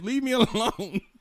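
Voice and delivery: exasperated, dismissive, annoyed, pushed up high.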